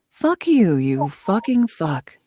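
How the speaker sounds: soothing radio announcer voice. Swearing on request to show the NPR voice: soothing NPR voice. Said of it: "swear in my N P R voice".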